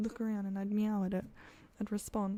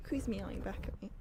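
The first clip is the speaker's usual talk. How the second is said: plain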